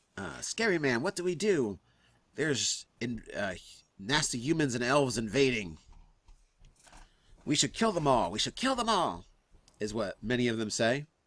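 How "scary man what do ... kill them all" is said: put-on goblin voice, sing-song swooping pitch. A game master voicing goblins heard down a tunnel, goblin voice. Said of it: "goblin voices".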